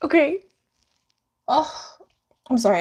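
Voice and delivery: high, nervous, panicky laughter breaking through speech. Reacting to something that scared them, laughing from panic. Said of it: "I'm laughing from panic".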